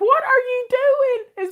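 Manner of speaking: very high, shrill yell at the top of the lungs. Speaker retells shouting at a man pouring her stuff down the sink, retelling her loud yell. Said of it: "as loud as I could".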